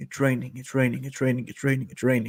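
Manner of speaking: half-whispered over and over, hushed. Retelling how someone burst into the room: imitating someone half-whispering. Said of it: "he just kept whispering".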